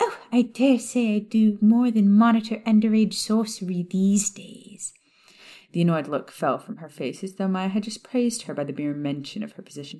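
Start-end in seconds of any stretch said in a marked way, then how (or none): 0.0-4.9 high-pitched voice, pitched up, sugary sweet. Narrating a story, voice Umbridge answering Maya in a high-pitched, sugary voice. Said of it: "a variety of pink shades in the form of a short toad-like witch who stood unassumingly in [name]'s doorway with a stack ... A high-pitched, sugary voice interrupted [name]'s thoughts".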